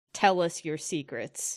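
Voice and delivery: deliberately gruff, growling put-on voice. Character interrogating a skull, demanding its secrets; gruffest voice she can. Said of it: "in the gruffest voice that she can".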